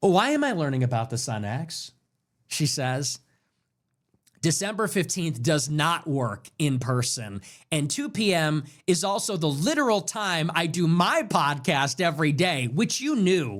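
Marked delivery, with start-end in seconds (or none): 0.0-1.9 mock stuck-up, snooty woman voice. Mocking a post about learning news on X: imitating a snooty Karen tone.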